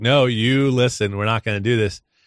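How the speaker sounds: ordinary delivery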